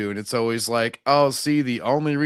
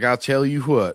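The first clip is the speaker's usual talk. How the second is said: put-on cartoonish Southern accent, drawling. Describing how someone talks, the speaker slips into a Hank Hill voice. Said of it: "He's like Hank Hill".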